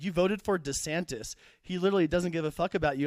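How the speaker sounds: ordinary talk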